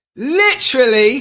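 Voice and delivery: slight British accent, very high and very loud. Offering to do it for someone, saying one word in a little British accent. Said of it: "you got that little British accent there".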